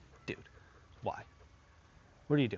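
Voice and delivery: hushed, breathy, disappointed whisper. Showing how to scold a dog after a warning: disappointed tone. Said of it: "I'll move into disappointment".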